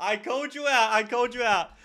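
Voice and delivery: gleeful teasing gloat, high-pitched and loud.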